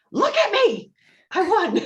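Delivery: very high, shrill, demanding triumphant victory scream. Describing a character winning a game, Prudence screaming. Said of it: "she just screams out".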